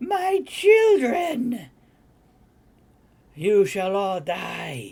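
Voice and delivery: very slow, high, echoing, reverberating screech in giant voice. Narrating the scene, the storyteller gives her line in a large, screeching, reverberating voice. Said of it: "in a large, screeching, reverberating voice".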